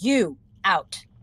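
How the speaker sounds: thunderous, magically swelled, very loud booming voice. Casting the loud-voice spell again at the two drow: magically booming loud voice. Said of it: "cast Thaumaturgy again".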